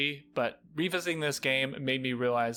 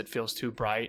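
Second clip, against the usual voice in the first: ordinary talk, nothing marked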